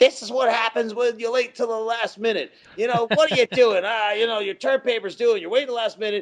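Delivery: play-acted nagging mom voice, fast, high scolding yell. Retelling his mother scolding him over a late term paper, imitating mom yelling. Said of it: "my mom's like yelling at me".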